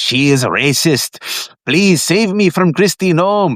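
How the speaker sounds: put-on high-pitched male voice with Spanish accent. Speaker retells a scene with a mutant, voicing the face in a spanish accent. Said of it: "like a Mexican with a Spanish accent".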